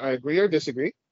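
ordinary talk

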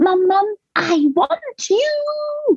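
put-on very high, very slow, rising toddler scream. A mother retells her three-year-old calling for her: imitating a child screaming. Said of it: "he'll scream that at the top of his lungs".

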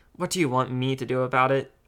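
ordinary delivery, nothing marked

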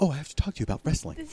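very hushed, quick, theatrical stage whisper. Describing a scene before the camera moves, quoting a man's line in a stage whisper. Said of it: "in that sort of stage whisper".

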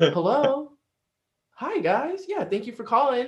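very high put-on phone voice.

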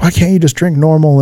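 put-on scolding mother voice. Recalling a mother yelling at the speaker: imitating a mom yelling. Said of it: "yelling at me".

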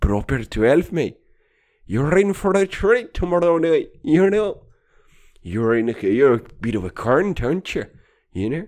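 loud, bad, jokey put-on Irish accent. Speaker riffing at a listener, switching into a put-on Irish accent. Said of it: "Fucking Irish accent, right?".

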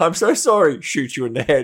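put-on very high, loud, profusely apologetic gushing. Retelling how a reluctant traitor apologized while attacking: imitating profuse mock apologies. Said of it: "she was apologizing profusely".

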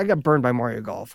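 normal talking voice

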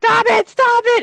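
play-acted very high, loud, pained screaming. Retelling a hearing test that hurt the ears: imitating own screaming. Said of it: "And I'm screaming".

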